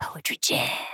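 hushed, unvoiced storyteller whisper.

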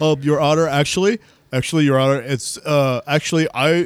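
mock stuttering, put-on stammer. Imagining him stuttering to the judge, imitating someone stuttering. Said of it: "just stuttering".

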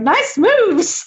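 very high, squeaky voice. Retelling Hootie's remark to a dancing Gus: Hootie voice. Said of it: "then Hootie's like".

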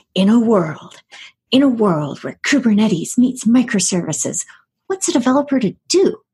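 deep-toned movie-trailer announcer narrator voice. Opening a podcast episode with a line in movie announcer voice. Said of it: "I have to start this with the movie announcer voice".

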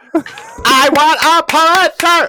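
very high-pitched, blaring, loud outburst. A co-host demanding a Pulitzer for this episode, sounding like a Dalek. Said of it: "I just sounded like a Dalek on that one".

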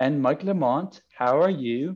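put-on very strong Scouse Liverpool accent. Retelling a stranger's greeting when he arrived: Joe's Liverpool accent. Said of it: "In this very like Liverpoolian accents".

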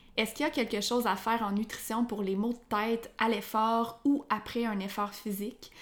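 ordinary talk, nothing marked

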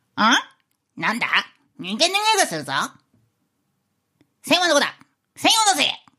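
put-on frog character voice. Doing a requested impression after a countdown: head-clerk frog impression. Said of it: "番頭ガエル風で".

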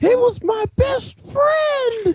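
very high, stretched, drawn-out grunt yell. Retelling a game moment, the speaker voices an enemy grunt, retelling a grunt's yell. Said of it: "he's yelling".

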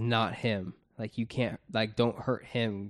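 normal talking voice

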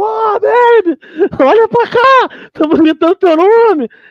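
put-on high, drawn-out shout. Retelling standing up at a game to call a player: imitating own past shout. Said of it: "eu levantei gritando".

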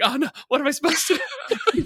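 very high-pitched, alarmed, panicky voice. Retelling being yelled at by the bus driver: retelling own panic.

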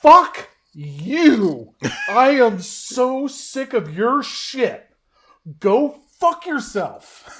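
very loud, high, slow, shrill, drawn-out top-of-lungs scream. Retelling yelling at a person across a full room, reenacting a top-of-lungs shout. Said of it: "I like at the top of my lungs".

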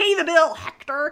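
loud, high, over-the-top exaggerated American accent. Quoting an audiobook character's line, in an exaggerated American accent. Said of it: "in this just really exaggerated American accent".

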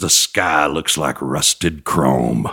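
dropped very low and slow. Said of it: "in that [name] voice".

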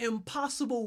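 emphasis on 'impossible'. Leading a repeated phrase, stressing a different word each time: stress on 'impossible'. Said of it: "we're going to emphasize each word".

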